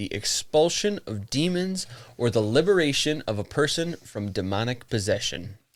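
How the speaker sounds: plain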